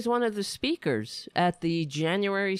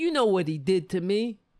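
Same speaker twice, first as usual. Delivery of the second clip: thick, overdone put-on New York accent. Acting out a con man's act, in an exaggerated new york accent. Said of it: "his putting on the New York accent... now let me pull out my act".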